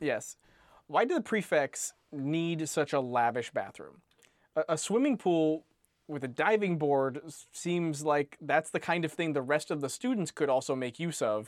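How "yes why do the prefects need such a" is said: usual speaking voice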